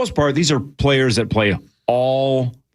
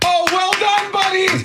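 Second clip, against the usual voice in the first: mock sarcastic praise, higher pitch. Retelling how players react to an early celebration: imitating sarcastic congratulation. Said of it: "sarcastically go".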